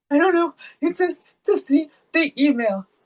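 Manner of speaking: acted-out, high, tearful voice, on the verge of crying. Retelling what was said after seeing a zero grade: retelling tearful words. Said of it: "until I started tearing up".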